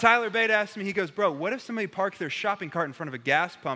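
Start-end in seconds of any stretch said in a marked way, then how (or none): none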